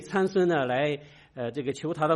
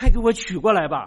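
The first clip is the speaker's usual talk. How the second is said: forceful, very loud, high-pitched commanding tone; 5 semitones higher, 8 dB louder than usual. Contrasting a mild tone with giving an order: commanding tone. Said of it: "如果我们这个以命令的语气的说".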